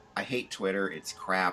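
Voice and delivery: ordinary talk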